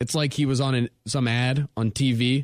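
ordinary talk

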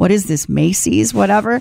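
put-on muttering under breath. Retelling own remark at a garage sale: imitating muttering under breath. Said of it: "muttering on, under my breath".

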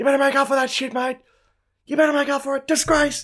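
mock, very high, shrill, furious screaming. Retelling what his team's keeper screamed at a player, imitating someone screaming threats. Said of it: "literally was just screaming threats at him".

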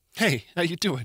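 too aggressive, overly forceful delivery. Opening the talk with a greeting, then apologizing: too aggressive greeting. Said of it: "that was too aggressive".

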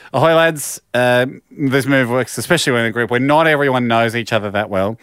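normal talking voice

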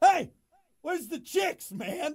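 very high, shrill, mock shouting. Acting out a phrase they learned about a party: mock yelling. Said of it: "You keep yelling".

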